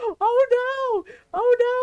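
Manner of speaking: mock shrieking, very high and very slow. Retelling how a brother screamed at a shadowy figure: imitating brother screaming. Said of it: "he starts screaming".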